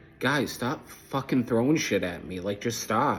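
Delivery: normal talking voice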